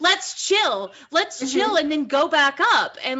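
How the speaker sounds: ordinary delivery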